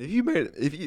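voice cracking. Thanking listeners at the end of the episode, voice crack. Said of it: "apologies for the, the voice crack there".

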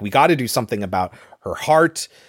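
ordinary talk

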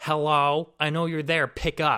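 put-on very loud, furious, angry old-woman shout. An old lady shouting over a store's intercom, imitating an angry old lady. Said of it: "this old lady very angrily saying".

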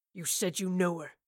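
low growl from deep down. A man holding a woman at gunpoint confronts her, low growl. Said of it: "he growled in a low voice".

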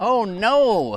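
female voice, high-pitched, loud, alarmed yell. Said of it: "I hear this woman yell".

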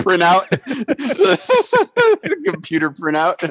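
words laughed out, high-pitched laughing delivery.

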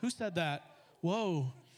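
ordinary talk

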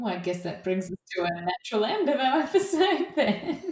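words breaking into laughter. Closing the episode after a big silence following a question, laughing while speaking. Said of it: "I'm just laughing".

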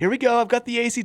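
put-on eager, high-pitched child voice. Describing a favorite video of a kid opening his ACT scores; imitating an excited kid. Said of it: "He's like very excited about it".

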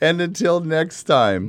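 smiling voice, very high and very loud. Restarting a sign-off after reading the wrong line, smiling while talking. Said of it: "You have the smile in your mouth".

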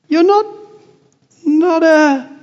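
trembling faltering voice. Susan asks Aslan, unable to bring herself to say ghost: shaky voice. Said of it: "said Susan in a shaky voice".

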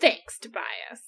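sarcastic, dry delivery. Retelling [name]'s sarcastic thanks to Tobias: retelling sarcastic thanks. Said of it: "I was just being a sarcastic little bitch".

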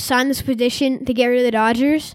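plain

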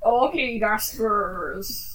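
low pirate voice from the side of the mouth. Following tips on sounding piratey, replying in pirate voice. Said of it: "You sound more like a pirate already".

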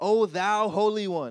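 pompous put-on prayer voice, high, loud and drawn out. Showing the voice you need not put on to talk to god, put-on prayer voice. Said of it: "you don't have to put on this voice".

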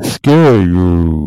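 scary voice with mouth right on the microphone. Teasing the other speaker who was terrified: scary voice with mouth on microphone. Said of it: "Are you doing some sort of voice modulator?".

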